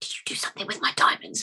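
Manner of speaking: very quiet, hushed, barely-there whisper. Game narrator voicing a man questioning a player character, very quiet. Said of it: "Very like very quietly".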